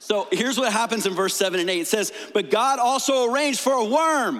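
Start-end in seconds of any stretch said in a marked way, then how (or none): 2.3-4.4 exclamatory, pitched-up emphasis. Reading a verse that ends with an exclamation point: exclamatory emphasis. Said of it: "I say it like that because there's an exclamation point".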